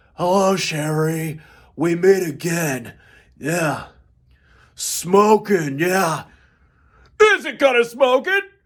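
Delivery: clumsy over-the-top actor voice, lines drawn out, hammy. Imagining lines from The Mask performed, in a Nicolas Cage voice. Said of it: "doing all the Mask lines in the Nicolas Cage voice".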